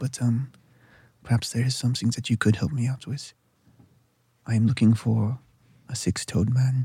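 whispering softly. The elf leans in close and speaks to you: soft whisper. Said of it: "speaks to you in a soft whisper".

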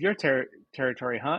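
ordinary talk

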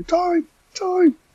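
very loud, very high-pitched shout. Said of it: "you just hear [name] shouting".

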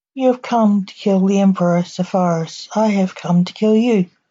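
plain reading voice

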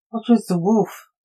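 ordinary delivery

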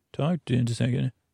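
mock mumbled voice. Recounting what Mumble used to say, mumbling like Mumble.

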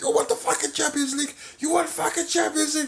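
very high, shrill, frantic, out-of-control screaming rant. Retelling how he lost his mind in the last episode after missing the Champions League, imitating Arteta screaming. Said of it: "He was screaming".

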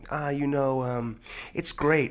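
very slow, every phrase rising upward in pitch. Acting out how another speaker answered an interviewer: imitating upward-inflecting interview voice. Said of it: "I can't get out of the character".

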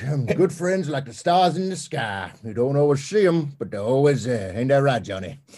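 put-on talking like an old man. Doing a bit about old man Ciampa on a chair: old man Ciampa voice. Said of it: "Old man Ciampa's voice on that".

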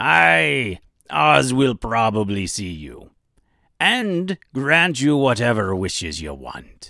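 put-on light pirate accent with a drawn-out aye. Narrator voicing a wishy-washy goofball character, in a bit of a pirate accent. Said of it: "I gave him a bit of a pirate accent".

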